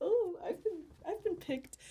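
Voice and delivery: bashful little voice. Retelling opening a package of presents: imitating own sheepish reaction. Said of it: "felt very just kind of sheepish".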